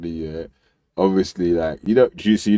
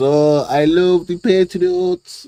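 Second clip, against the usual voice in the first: put-on accent from Iran; 10 semitones higher than usual. Mocking how someone talks when he meets the Patriots: imitating Banksy's Iranian accent. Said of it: "in his Iranian accent".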